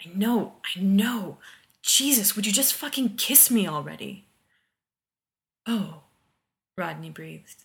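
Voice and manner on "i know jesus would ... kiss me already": ground out, louder, higher. Reading John's answer to Rodney, who keeps refusing to kiss him, ground out. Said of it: "John ground out".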